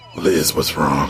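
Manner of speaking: low, deep demon voice. Reading a book aloud in roles, the speaker plays Jessica talking to Liz, in a demon voice. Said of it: "Can I use it like a demon voice?".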